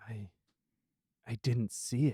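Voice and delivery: very slow mutter under the breath, to himself. Voicing an exhausted guard staring into the fire: muttering under his breath. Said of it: "You hear him say under his breath".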